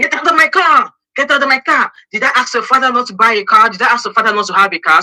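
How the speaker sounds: acted-out, loud, high screaming outburst. Retelling how an uncle ordered the kids out: imitating uncle screaming. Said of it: "my uncle came out and screamed".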